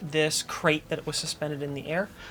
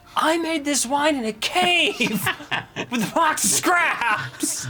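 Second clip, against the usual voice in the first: shouting, much louder and higher; 9 semitones higher, 6 dB louder than usual. Joking with the others, yelling. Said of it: "Is that why you're yelling?".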